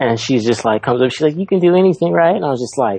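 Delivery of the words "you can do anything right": put-on tiny mouse-like voice. Retelling a wife's encouragement before having to dance, imitating her tiny mouse voice. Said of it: "super tiny fucking mouse voice".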